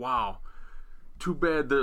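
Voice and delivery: put-on sarcastic tone of voice. Retelling a social media post by Scott D'Amore, imitating Scott D'Amore sarcastically. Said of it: "very sarcastically".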